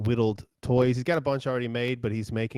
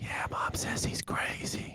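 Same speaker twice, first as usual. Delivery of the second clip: put-on hushed, slow, soft whispering child voice. Voicing a child whispering back to another child: whispering child character. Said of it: "the other one whispers back".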